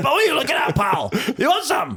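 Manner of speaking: put-on very high, swooping, angry Scottish accent. Acting out a woman's angry Scottish minge: put-on angry Scottish voice. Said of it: "a woman's angry Scottish minge".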